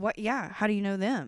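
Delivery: mock suspicious, accusing tone. Imitating a jealous partner questioning after dinner: imitating a suspicious questioning tone. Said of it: "but in that tone".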